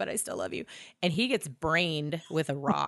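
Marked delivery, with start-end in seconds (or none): 0.0-0.6 put-on crying voice, lower and quieter. Retelling a story, acting out a character's outburst: imitating Sam crying. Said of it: "he's crying now".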